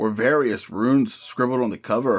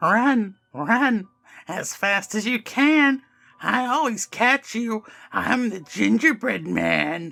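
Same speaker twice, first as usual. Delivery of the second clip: very high-pitched, rasping monster voice; 11 semitones higher than usual. Narrator reading the Gingerbread Man blocking two people's way to the exit, high-pitched raspy voice. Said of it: "It said in a high-pitched, raspy voice".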